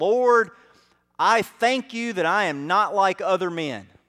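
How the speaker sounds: mock, booming, loud, boisterous voice. Retelling the parable, the Pharisee prays in the temple: loud, boisterous voice. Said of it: "in a loud and boisterous voice says".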